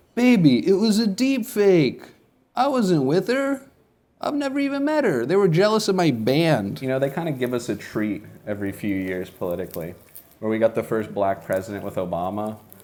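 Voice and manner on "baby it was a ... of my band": very high, loud, swooping arguing voice. Doing a bit about the future, an impression of a couple arguing. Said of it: "This is my impression of a couple arguing".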